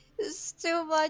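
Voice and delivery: high, weepy, sobbing, tearful crying voice. A role-play character on a street corner, asked why she is crying, answers crying. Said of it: "Why are you crying?".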